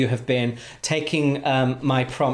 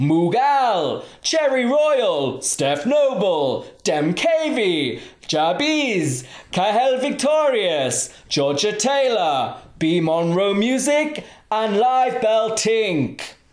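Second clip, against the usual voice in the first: announcer voiceover voice, pitched up; 8 semitones higher, 3 dB louder than usual. Giving shout-outs to listeners, the speaker reads names in an X Factor commentary voice. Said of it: "Love that voice".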